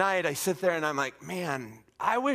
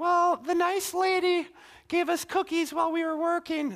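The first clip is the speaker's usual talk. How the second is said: put-on very high, unbroken little child's voice; 12 semitones higher than usual. Describing kids sharing on a trip, imitating a sixth grader's unbroken voice. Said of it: "their voice hasn't dropped yet, so that's why they talk like that".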